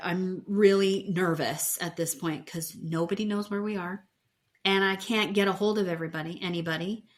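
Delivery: ordinary delivery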